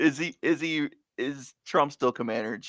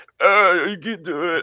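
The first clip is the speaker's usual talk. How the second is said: very slow, drawn-out put-on voice; 4 semitones higher than usual. Speaker does an impression of the current leader, put-on impression voice. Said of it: "that was my best im best impression of our, uh, current leader".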